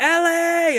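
put-on child's very high, loud yelled call. Retelling how a child was asked to fetch someone and screamed upstairs: imitating a child screaming a name. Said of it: "he just screams at her".

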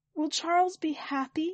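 little, meek, small, high, timid voice. Narrator asking Allocator a question, in a small voice. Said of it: "I ask in a small voice".

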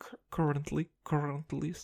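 put-on "currently" pronounced with a Russian accent. Repeating a word the way it came out on video: imitating own Russian accent. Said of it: "the most Russian shit I've ever said".

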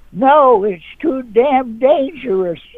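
shrill, very high-pitched, drawn-out yell. Retelling how the fan yelled back at the opponent: imitating a fan yelling. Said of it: "she yells".

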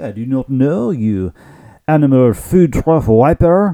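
put-on, fake French accent. Host answers a co-host's question on their show, in a French accent. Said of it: "What's up with the French accent today?".

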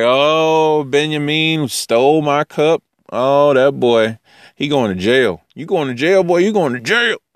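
character voice, long drawn-out "oh", then teasing. Retelling the Bible story, acting out Joseph accusing Benjamin of theft. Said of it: "'cause Joseph's like".

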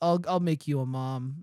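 ordinary talk, nothing marked

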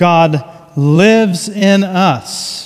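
slow, drawn-out stress on lives.

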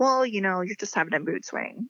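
normal talking voice

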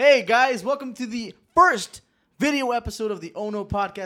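near-yelling, loud, high-pitched, eager excitement. Welcoming viewers to the first video episode: loud excited greeting. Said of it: "Sorry that I'm yelling".

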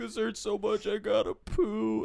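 play-acted very high, slow, drawn-out sobbing whine. Retelling a video of a kid crying: imitating someone crying. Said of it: "he's crying. He's like".

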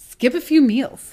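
very condescending, patronizing, slow talking-down tone. Reading a child's weight-loss advice aloud, delivering it very condescendingly. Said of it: "say it very condescendingly".

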